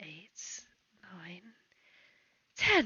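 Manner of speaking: quiet mumbling under the breath. Narrating a tavern scene: a figure pinches the bridge of their nose, muttering to themselves. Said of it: "You can hear them mutter unto themselves".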